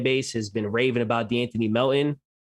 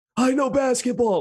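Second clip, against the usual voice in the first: very high, husky, hoarse rasp; 13 semitones higher, 3 dB louder than usual. Mimicking how he answers when they look at the film, imitating his hoarse voice. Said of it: "with like his hoarse voice".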